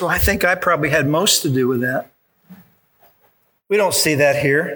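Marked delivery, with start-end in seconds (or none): 0.0-2.1 loving, sweet little voice. Speaker imagining what John would have said about the miracle, John's mock loving sweet voice. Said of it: "John would have said in his loving little sweet voice".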